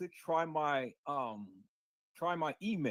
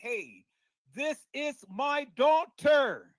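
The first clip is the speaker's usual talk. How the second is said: very high, very loud, shrill, drawn-out screaming holler; 9 semitones higher, 11 dB louder than usual. Retelling how a woman went out of her way to holler: imitating someone screaming and hollering. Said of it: "to scream and holler to everybody".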